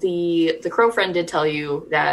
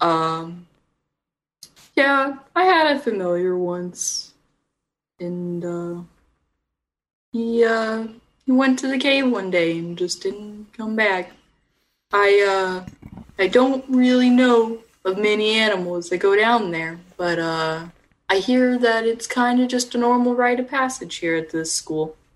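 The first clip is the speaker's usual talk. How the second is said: put-on horse voice, much higher; 5 semitones higher than usual. Speaking as the horse friend in the story, in a horse character voice. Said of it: "I'm gonna talk like this".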